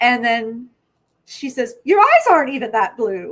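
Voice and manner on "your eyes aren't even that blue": put-on loud, sing-song older Irish woman accent. Retelling a funny moment, the speaker quotes what she says in an older irish lady accent. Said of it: "an Irish accent of like an older lady".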